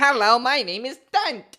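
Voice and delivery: high, slow, booming goblin voice. Showing which one is her goblin character voice: Dunt goblin voice. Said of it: "my goblin voice is this one".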